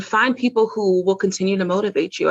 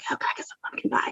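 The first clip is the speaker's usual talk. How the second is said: hushed whisper, quieter. Acting out secretly asking for pumpkin pie: whispering. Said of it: "I have to whisper it sometimes".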